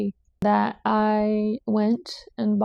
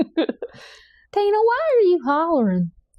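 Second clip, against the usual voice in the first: very slow, drawled, swooping fake Southern accent; 8 semitones higher, 3 dB louder than usual. Joking about the name tina in a put-on southern accent. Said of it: "pull out my Southern accent".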